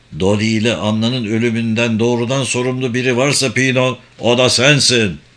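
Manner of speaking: plain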